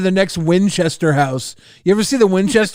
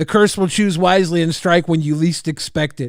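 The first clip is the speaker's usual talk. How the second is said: ordinary delivery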